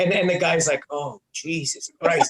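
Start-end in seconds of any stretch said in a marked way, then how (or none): 0.9-2.3 put-on muttering under the breath. Retelling a caller's reaction: imitating someone muttering under breath. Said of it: "he's under his breath".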